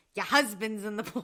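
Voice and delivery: fast, quick put-on New Jersey accent. Repeating a line that always cracks them up, in a put-on Jersey accent. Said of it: "I still vocal sim crack up all the time by going".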